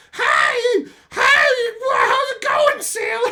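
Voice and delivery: weird, very high, shouted harpy shriek. Show listeners what the woman you would hate listening to sounds like, in a weird harpy voice. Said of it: "whatever weird harpy voice she has".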